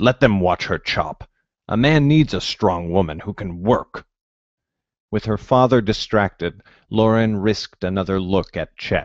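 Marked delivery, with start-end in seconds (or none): 0.0-4.0 stubborn, obstinate, insistent voice. Narrator reading a story, voicing the heroine's father answering her mother, father speaking stubbornly. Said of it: "never more to fear his meaty arms or rank breath. / Her father got close, / Her father got close, / he said in a growling whisper".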